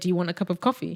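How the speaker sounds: put-on even, unemphatic one-level delivery, calm and soft. Explaining how their even delivery hides what they say, imitating own calm voice. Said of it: "I just told you in the calm voice".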